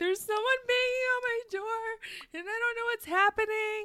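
play-acted, shrill, very loud, panicked sobbing. Retelling a call to the police, acting out their past self, imitating own past sobbing. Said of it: "crying, like, sobbing".

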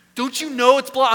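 very high-pitched, shrill, loud yelling. Retelling yelling at Siri in the car over a blocked exit: retelling yelling at Siri. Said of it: "I'm yelling at Siri in my car".

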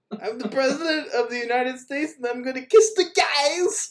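high, goofy Eastern European accent on guys. Acting out the president's words to laugh at how he said them, Borat voice on "guys". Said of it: "He did like a Borat voice when he said guys".

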